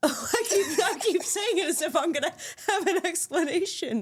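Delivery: high, laughing, self-mocking tone.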